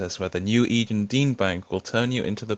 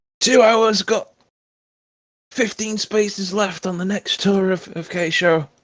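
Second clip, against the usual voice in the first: very high, loud hawker-style calling-out yell; 10 semitones higher, 6 dB louder than usual. A game master voicing a character who goes back to his yelling. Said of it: "goes back to his yelling".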